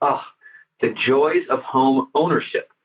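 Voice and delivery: mock-sarcastic delivery. Retelling what a woman said walking past at the hedge: retelling a sarcastic remark. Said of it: "very sarcastically".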